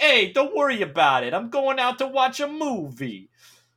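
put-on loud, thick New York accent laid on heavily. Complaining about a character's stereotypical accent, quoting him: Raphael's thick New York accent. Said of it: "so stereotypically thick".

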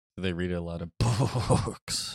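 talking like a horse. Joking that horses can read, speaker says the line like a horse. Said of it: "I tried to say it like a horse".

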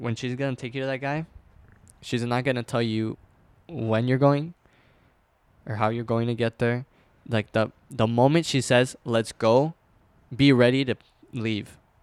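ordinary delivery

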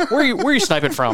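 high, loud mock angry yell.

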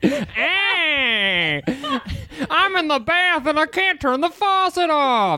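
very high talking-cat voice, stretched hey. Performing a bit for co-hosts, Jerry Seinfeld as a cat. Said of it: "Are you Jerry Seinfeld as a cat?".

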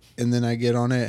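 ordinary talk, nothing marked

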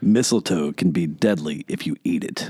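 deep, low, dark vigilante voice. Speaker quotes a movie line for a guessing game, in Batman voice. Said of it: "you're going to get my Batman voice".

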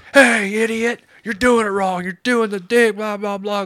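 very high, shrill, loud hollering. Retelling a coworker yelling over the radio: imitating someone yelling. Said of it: "starts fucking yelling at me".

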